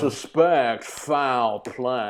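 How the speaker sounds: put-on, over-the-top Southern accent. Quoting a movie detective's line, imitating Daniel Craig's horrible accent. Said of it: "Horrible accent".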